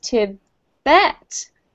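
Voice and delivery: Tibet with second syllable -bet stressed. Teaching how to pronounce Tibet and Tibetan: stress on -bet in Tibet. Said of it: "we put the emphasis on the second syllable for Tibet".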